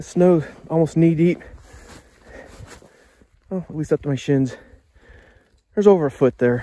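out of breath. Speaker arriving at a snowy camp spot in the woods: out of breath. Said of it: "I'm out of breath".

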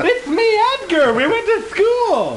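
goofy high character voice.

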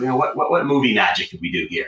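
high-pitched voice, full of amazement and wonder. Retelling a question asked when stuck on a cut: Ted Lasso voice. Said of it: "he kinda said it in that Ted Lasso voice".

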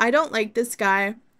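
usual speaking voice

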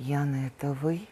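hushed, horror-struck half-whisper. Speaker retells a man recognizing her and asking if it is her: retelling a horrified half-whisper. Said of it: "правда с ужасом".

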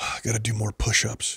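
imitated mutter under breath. Retelling how a guy walked away muttering to himself, imitating muttering under breath. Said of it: "He says it under his breath".

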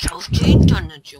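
loud, slow, annoyed yelling outburst.

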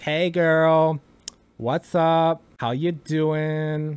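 over-the-top feminine voice, very slow and drawn out. Talking about drag, showing the exaggerated femme voice they find fun. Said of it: "doing like an exaggerated femme voice".

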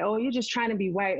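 ordinary talk, nothing marked

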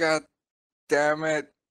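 high-pitched scream full of pain. Storyteller voicing an injured character in a role-playing game: screaming in pain.

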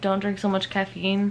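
usual speaking voice

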